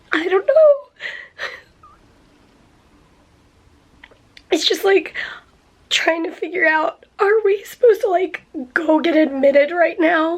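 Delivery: crying, tearful voice, talking through tears. Speaker talks between phone calls, crying.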